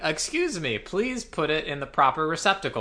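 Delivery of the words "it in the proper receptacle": ordinary talk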